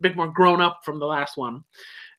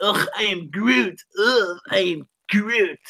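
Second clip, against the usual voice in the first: put-on slow, mopey, put-upon, bored teenage groan, drawn out; 3 semitones higher than usual. Retelling how teenage Groot talks: imitating Groot as a sulky emo teen. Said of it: "He was like that, but saying".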